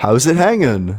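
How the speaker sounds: sarcastic, mocking, flippant tone. Urged to talk to God, the speaker greets God sarcastically. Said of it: "That's that is the most sarcastic way".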